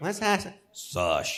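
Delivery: pitched way down and pushed out forcefully. After explaining how the name Sasha is pronounced, say it again in an Al Pacino voice. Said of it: "Sasha com a voz do Al Pacino".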